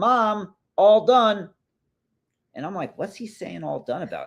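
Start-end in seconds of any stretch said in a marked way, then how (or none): 0.0-1.5 acted-out child's yell, high-pitched. Retelling how Ezzy called out to his mom from the bathroom, imitating Ezzy yelling. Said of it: "I hear E yell out".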